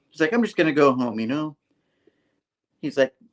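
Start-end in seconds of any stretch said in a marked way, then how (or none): 0.3-1.5 put-on innocent voice. Retelling a comic scene where a character acts all innocent: imitating feigned innocence. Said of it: "acting all innocent or something".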